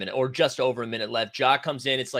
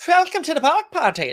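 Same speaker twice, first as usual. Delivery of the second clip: very high, loud put-on German accent; 7 dB louder than usual. Repeating the quoted line from the block: put-on German accent. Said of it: "that was German, I think".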